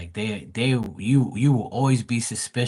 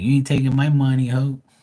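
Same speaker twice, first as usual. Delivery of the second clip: mocking greedy man voice, louder; 3 semitones higher, 4 dB louder than usual. Imagining a younger partner's greedy man refusing money: imitating a greedy man. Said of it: "He be like".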